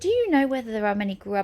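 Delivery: ordinary delivery, nothing marked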